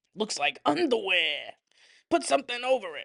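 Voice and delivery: mob-vibes film father character voice. Repeating the dad's line again: imitating the movie dad's voice. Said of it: "his voice is so fucking funny and iconic".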